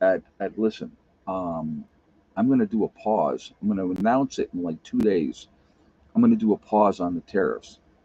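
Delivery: hushed, confidential-sounding stage whisper. Retelling an imagined secret tip from the inner circle: imitating a half-whisper. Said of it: "he whispers to me and he says".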